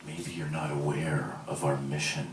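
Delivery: very quiet, low, breathy, motherly purr. Retelling how a woman sat the speaker down, imitating her breathy maternal purr. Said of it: "in a breathy, maternal voice, she purrs".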